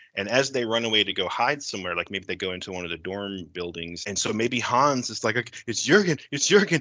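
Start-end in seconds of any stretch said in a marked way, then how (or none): 5.7-6.8 near-panicked, pitched-up, urgent alarm. Acting out a character spotting someone while hiding: almost panicking. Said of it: "and he's almost panicking".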